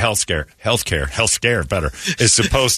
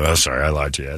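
put-on childlike apologetic voice; 4 semitones lower than usual. Retelling an apology after being told to quit lying: imitating own childlike apology. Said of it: "Immediately like a child".

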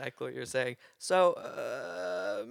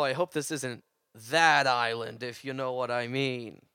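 loosely done, put-on New York accent; 3 semitones lower, 4 dB louder than usual. After taking a ferry to an island, joking to the group: sort of New Yorker accent. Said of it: "That was like a sort of New Yorker accent".

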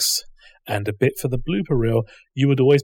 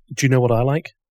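ordinary talk, nothing marked

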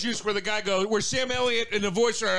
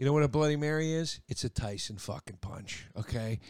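much lower, quieter lowered voice; 8 semitones lower, 6 dB quieter than usual. Making a case about brunch drinks to the others, in a lowered voice. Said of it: "you lower your voice and you lean forward".

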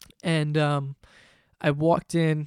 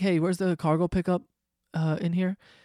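plain

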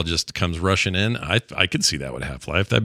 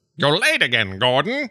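put-on crusty old-man voice, pitched up; 8 semitones higher than usual. Describing a game's look-alike scientists, the speaker voices one: crusty old man voice. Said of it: "that same crusty old man voice".

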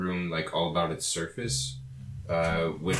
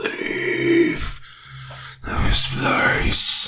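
very loud, resounding, booming voice; 9 dB louder than usual. Game master voicing a voice that booms into the players' heads, booming voice. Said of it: "just comes booming into all of your heads".

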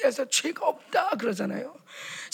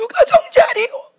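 weeping, tearful, very high-pitched voice; 11 semitones higher, 8 dB louder than usual. A speaker recounts proclaiming a scripture passage back then, retelling a crying declaration. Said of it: "막 울면서".

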